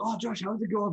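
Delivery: put-on bright, very high-pitched French accent. The speaker quotes how Hugo greets him at events, imitating Hugo's French accent. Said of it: "But with like a French accent".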